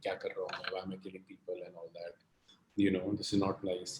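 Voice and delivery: very soft, sad, upset, troubled tone.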